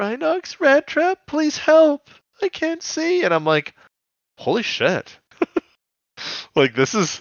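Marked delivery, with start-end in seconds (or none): 0.0-3.2 very high, scared, pleading voice. Retelling a scene where Cheetor begs Rhinox and Rat Trap for help: Cheetor voice, mock-scared pleading. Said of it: "They're scared".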